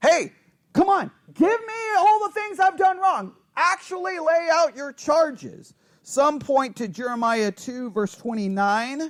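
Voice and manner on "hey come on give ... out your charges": higher and louder, forceful delivery. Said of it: "it's an actual challenge by God".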